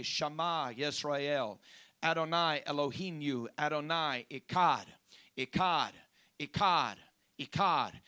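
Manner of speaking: usual speaking voice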